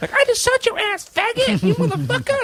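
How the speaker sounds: very high, squeaky little voice. Describing online shooting-game hecklers, mimicking one in a little high-pitched voice. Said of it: "some little high pitched voice will come on and be like".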